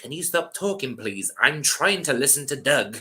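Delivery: self-important, snooty, overly polite, pompous tone. Retelling what the guy in front said after they giggled: mock-pompous request. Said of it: "you pompous prick".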